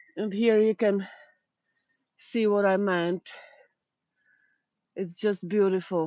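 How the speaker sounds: breathless, winded. Speaker showing viewers the view, out of breath. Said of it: "I'm completely out of breath".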